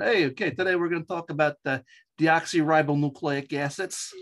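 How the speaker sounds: New York Long Island accent. Showing how a class sounds when the accent comes back: strong Long Island accent. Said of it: "I can still bring it back".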